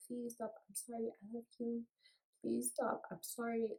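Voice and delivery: high, desperate, repeated pleading tone. Retelling apologizing over and over while being beaten: imitating her own pleading apology. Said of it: "I'm apologizing. I'm like".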